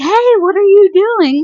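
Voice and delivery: loud, intrusive, high-pitched, slowed call-out.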